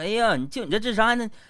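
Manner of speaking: mocking tone, high pitched and loud.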